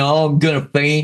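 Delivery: sobbing, weepy crying voice. Retelling how a woman pulled over by a cop started crying, imitating someone crying. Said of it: "She starts crying".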